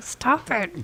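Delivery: soft hushed mutter under the breath. Speaking in character to a cat companion, telling it to stop: under the breath. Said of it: "under my breath to Shenzo Wan".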